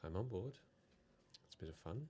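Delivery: hushed voice. Voicing a character who agrees in secret: whispering. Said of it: "She whispers back".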